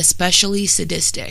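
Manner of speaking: ordinary delivery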